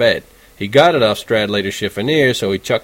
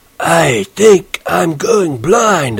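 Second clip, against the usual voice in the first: very raspy, very hoarse, very slow, drawn-out voice; 7 semitones higher, 4 dB louder than usual. Narrator reading a novel, pretending to go blind under his hat, very hoarse voice. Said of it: "I said in this very hoarse voice".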